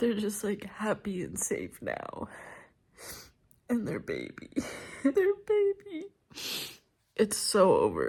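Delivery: sobbing, breaking down, ugly crying through the words. Finishing the last pages of a book as the sun rises, ugly crying. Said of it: "I'm like literally ugly crying right now".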